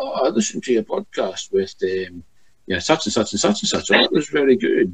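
put-on stoic, level, unbothered Scottish accent. Retelling what a man said when he rang, in his stoic Scottish accent. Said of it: "his typical stoic Scottish accent".

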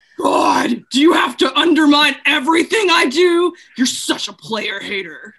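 possessed, metallic, demonic-sounding voice. Reading a script's demon role aloud: metallic demonic voice. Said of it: "Jennifer speaks in a metallic, demonic-sounding voice".

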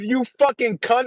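mock angry yelling. Retelling missing the tackle in the backfield: retelling own angry yell. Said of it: "I said that out loud".

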